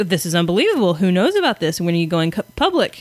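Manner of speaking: ordinary talk, nothing marked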